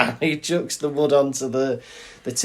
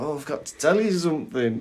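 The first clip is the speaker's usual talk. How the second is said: play-acted, fast, tearful speech through sobs; 4 dB quieter than usual. Retelling how the speaker broke news to someone, acting out own past crying. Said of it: "I'm crying".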